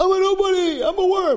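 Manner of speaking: very high, shrill scream, pitched way up. Retelling what a new guy started screaming, retelling a scream. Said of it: "the guy starts screaming".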